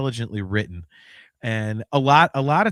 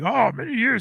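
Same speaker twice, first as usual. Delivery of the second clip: put-on movie creature voice, higher; 10 semitones higher than usual. Retelling a movie scene where a character does Yoda: Yoda voice. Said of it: "He does the Yoda thing".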